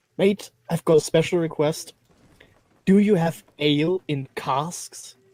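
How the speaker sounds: hushed whisper. In a role-play, the speaker's character approaches a worker: whispering. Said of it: "whisper to him".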